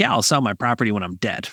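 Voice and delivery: put-on sarcastic voice. Retelling a test call where a caller answered: imitating a sarcastic caller. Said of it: "clearly being sarcastic".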